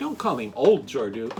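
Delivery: ordinary talk, nothing marked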